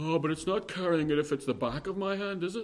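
hairsplitting, legalistic rule-lawyer tone. Speaker discussing rules on carrying, acting out a put-on Pharisaical legalistic voice. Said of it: "It just sounded Pharisaical and legalistic".

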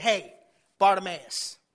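loud, commanding call. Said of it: "He commanded him to be called".

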